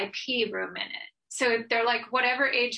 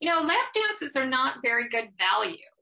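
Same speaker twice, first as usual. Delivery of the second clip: mock matter-of-fact, blunt, emphatic, hammered home; 3 semitones higher than usual. Retelling the husband's reply to their younger son at lunch, in a really loud voice. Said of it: "in this really loud voice".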